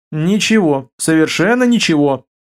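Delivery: ordinary delivery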